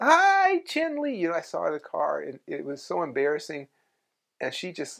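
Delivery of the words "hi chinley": very high, loud yelling. Telling how they spotted Chinley while driving, retelling a yelled greeting. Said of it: "I just yelled".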